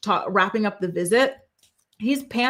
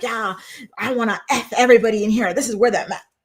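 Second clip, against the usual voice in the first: mock voice of a crude, rude, vulgar man; 4 dB louder than usual. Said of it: "when they come in so vulgar".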